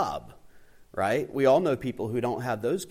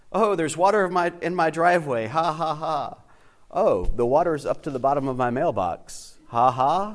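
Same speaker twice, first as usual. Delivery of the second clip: mocking sarcastic tone with fake ha-has, fake-amused; 4 semitones higher, 4 dB louder than usual. Reading out a friend's Facebook posts about flooding, imitating a sarcastic friend. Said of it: "kind of sarcastic like I am".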